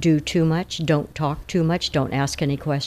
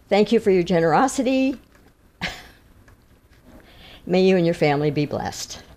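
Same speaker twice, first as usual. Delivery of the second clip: holding back tears, choked up; 2 semitones higher than usual. A speaker thanks someone for their generosity, getting choked up. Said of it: "I'm going to get choked up here".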